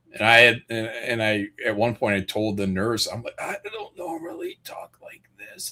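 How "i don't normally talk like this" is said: hushed, breathy near-whisper, barely voiced. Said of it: "That was my voice when I was in the hospital".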